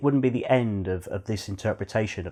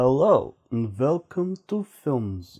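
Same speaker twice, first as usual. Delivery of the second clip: bad, slow, failed Transylvanian accent; 3 semitones higher than usual. A film show host opens the episode; bad Transylvanian accent. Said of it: "I can't do a Transylvanian accent".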